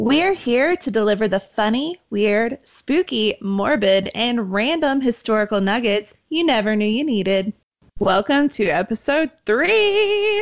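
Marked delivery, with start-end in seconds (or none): 8.0-10.4 big talk-show host voice, pitched higher. Welcoming listeners to the episode: Oprah voice. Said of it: "That was like my Oprah voice".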